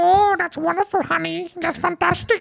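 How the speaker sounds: very high, rough, creaky grandma voice. Retelling a call with grandma, imitating grandma's voice. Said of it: "she talks like this".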